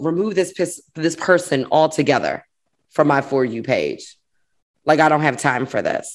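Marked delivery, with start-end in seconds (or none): none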